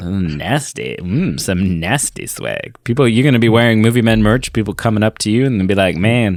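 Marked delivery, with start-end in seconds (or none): 0.0-2.8 sultry, hushed, very slow suggestive tone. Speaker promoting Movie Men merch, sexualized delivery. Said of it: "trying to sexualize it".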